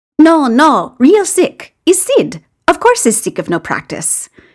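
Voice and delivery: calm, patient, high voice. Gino answers after Sid's reaction, patient explaining. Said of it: "Gino explains patiently".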